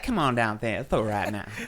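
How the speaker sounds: smooth ladies' man voice. Reminiscing about a voice they did with buddies, Leon Phelps ladies' man voice. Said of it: "the ladies man voice".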